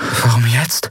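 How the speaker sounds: murmuring, half to oneself. Narrating Andriel's line as she watches fast ships approach; murmured. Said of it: "Murmelte Andriel".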